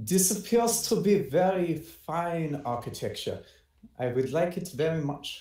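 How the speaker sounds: attempted German accent, acted. Voicing the character Valk, who is supposed to be German: Valk voice, put-on German accent. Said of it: "I guess I'll try and do a German accent".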